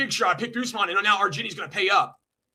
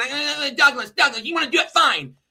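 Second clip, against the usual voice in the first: stuttering, halting stammer, repeating words; 5 semitones higher than usual. Mocking someone's answer to a fight challenge: imitating stuttering. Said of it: "you sit on there and you stutter".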